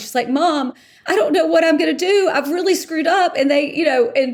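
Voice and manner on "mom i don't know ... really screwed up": play-acted sobbing, high, tearful and upset. Retelling a phone call to mom: imitating someone crying. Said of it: "calls her mom and she's crying".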